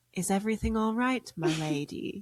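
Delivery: gentle, concerned, courtly character voice. Retelling what a squire character asked in a scene: imitating a soft-spoken question. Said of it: "very softly says, in character".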